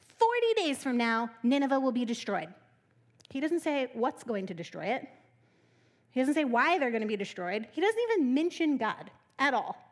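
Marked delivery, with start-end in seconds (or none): none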